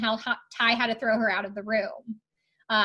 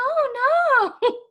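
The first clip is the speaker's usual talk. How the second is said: high breathy put-on voice, higher and louder; 6 dB louder than usual. Describing a cast member's voice, then imitating Zara's high breathy voice. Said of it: "that same kind of really high, just, like, breathy".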